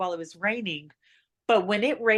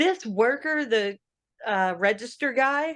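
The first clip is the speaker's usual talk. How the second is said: ordinary talk, nothing marked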